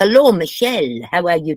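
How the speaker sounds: fake, put-on Portuguese accent. Showing how a female character should sound, greeting Michelle, Portuguese accent. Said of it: "She should be like this".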